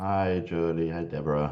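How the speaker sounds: tired, weary voice. David greets jody and deborah at the start of the recording, in a tired voice. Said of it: "you sound tired".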